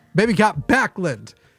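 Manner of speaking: blurted-out shout. Introducing himself at the start of the show, a sudden shout. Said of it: "compulsively shouted it out".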